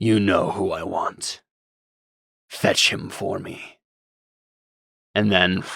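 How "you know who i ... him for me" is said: low, looming demon master voice. Voicing the master of demons commanding a giant demon monster: voice of the master of demons. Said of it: "the voice says".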